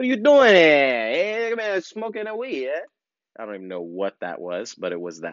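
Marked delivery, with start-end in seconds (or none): 0.0-2.8 very high, fake New York Italian mafioso accent. Retelling a man who caught the speaker smoking: put-on New York Italian accent. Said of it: "some kind of New York Italian something".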